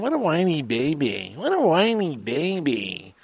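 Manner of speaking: very slow, swooping mocking sing-song, "baby" stretched. Imagining what viewers say about the complaining: imitating viewers mocking. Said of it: "you're saying".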